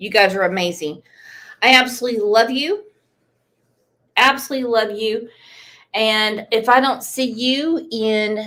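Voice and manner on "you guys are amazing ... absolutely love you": choked-up voice, catching with emotion. Thanking the audience before saying goodbye: choked up with emotion. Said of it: "I'm getting choked up".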